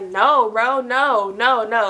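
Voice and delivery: fed-up, irritated, dragged out, very slow. Retelling a man on a three-way call refusing a request: imitating an upset man. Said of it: "you can hear in his voice, like, he's getting upset".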